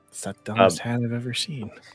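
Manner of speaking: whispering to himself. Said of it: "He just whispers it".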